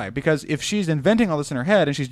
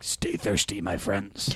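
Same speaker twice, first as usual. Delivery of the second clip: serious, low, gravelly, hushed half-whisper; 6 semitones lower, 7 dB quieter than usual. Saying who a character sounds like, quoting the guy in those commercials: imitating low gravelly serious voice. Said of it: "he's got this really low gravelly serious voice".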